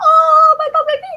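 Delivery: mock very high, very slow, loud, drawn-out wail. Acting out a mother reacting to her child's fall: imitating a mother starting to cry. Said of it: "starts crying and everything".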